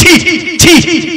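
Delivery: scornful tutting sound.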